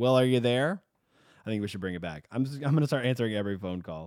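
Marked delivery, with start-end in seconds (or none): 0.0-0.8 snooty, talking-down, condescending sarcastic tone. Describing how early phone calls were answered, in mock-condescending sarcasm. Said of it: "sarcasm, just so condescending".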